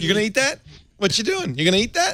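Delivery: eager, very high talking-dog voice. Voicing what goes through their dog's head: voicing their dog. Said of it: "all that ever goes through my dog's head".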